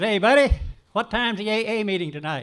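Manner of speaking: loud, high voice. Speaker retelling how a man crossed a lobby and spoke to him: loud voice. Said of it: "in a loud voice says".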